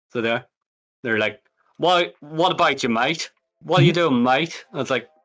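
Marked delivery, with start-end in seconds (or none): 1.7-4.6 bad put-on English accent, higher. Gamer mocking the cutscenes of GTA London, doing their bad English accent. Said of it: "they are the worst English accents ever".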